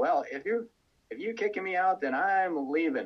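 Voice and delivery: furious, huffy, angry, high-pitched tone. Retelling a teacher's reply to being told she'd be kicked out: imitating someone angry. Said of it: "she got so mad, she said".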